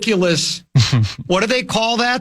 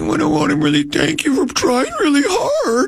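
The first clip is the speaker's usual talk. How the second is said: high, whiny sing-song complaining voice; 8 semitones higher than usual. Wondering aloud how another person said it, imitating someone whiny. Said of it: "Did he do it kind of in a whiny voice like that?".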